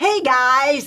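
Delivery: put-on very loud, high, strongly American accent. Retelling a clip of an American man on social media: imitating an American accent. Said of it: "very, very American".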